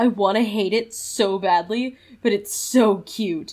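normal talking voice

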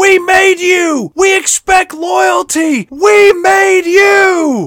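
very high, slow, drawn-out screamed cry. Retelling a waitress screaming outside a truck stop at night: imitating someone screaming. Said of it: "just starts screaming out".

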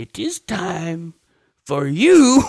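teasing, high, slow, drawn-out singsong. Retelling a movie scene to the others: teasing Yoda voice. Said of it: "And Yoda's all teasing".

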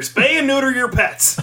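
belted out very loud, fast and very high. Claiming to be Bob Barker after being asked: Bob Barker voice. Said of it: "I'm Bob Barker".

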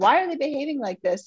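put-on high-pitched yelling. Retelling how the husband asked why the kids behaved so: imitating husband yelling. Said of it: "my husband's yelling at me and going".

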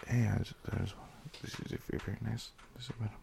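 very quiet, whispered, mumbled flirtatious delivery. Retelling how they talk when hitting on a woman: imitating own mumbled flirting. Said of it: "Is that what you mumbled".

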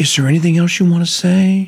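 gentle, caring tone full of empathy. Demonstrating how a son should ask a grandpa, tone filled with empathy. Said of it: "That's a tone that was filled with empathy".

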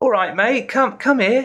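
put-on very high-pitched, friendly, matey Cockney accent. Describing a friendly Cockney chap who comes up to you, Cockney accent. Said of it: "this friendly Cockney chap comes up and says".

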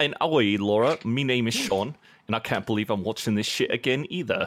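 cliché put-on English accent. Podcast co-host introducing himself on a watch-along episode, in a stereotypical english accent. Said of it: "go with my most stereotypical English accent".

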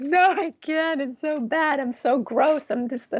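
high, blubbering, self-loathing sobbing adult tantrum. Recalling being on the floor after sobbing a while, reenacting an adult tantrum. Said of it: "just throwing like an adult tantrum".

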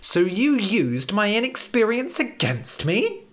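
feigned hurt, drawn out. Red replies to his teacher: mock-offended. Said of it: "pretending to be offended".

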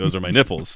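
ordinary delivery

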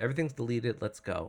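normal talking voice

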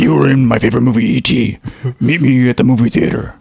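creepy demonic voice. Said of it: "the creepy demonic voice again".

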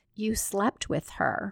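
ordinary talk

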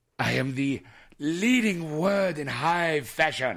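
put-on French accent. Playing the character Francois in the studio, French accent. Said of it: "Why are you talking like a Frenchman?".

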